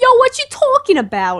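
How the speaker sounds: very high-pitched Brooklyn accent. Explaining which accents are hard to do, trying a brooklyn accent. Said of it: "So I try to do it like".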